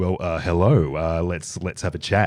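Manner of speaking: slow, put-on radio announcer voice. Showing how a voice changes when the mic comes on: mock radio voice. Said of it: "It's weird when a mic comes on, all of a sudden it's just like".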